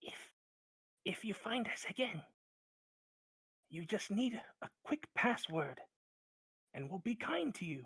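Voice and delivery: voiced stage whisper. Voicing Meepo, who beckons the party forward: whispering as Meepo. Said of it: "in a whisper".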